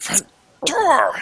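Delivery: very high, swooping goblin squawk.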